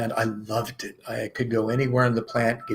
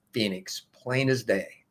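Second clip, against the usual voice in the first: ordinary talk, nothing marked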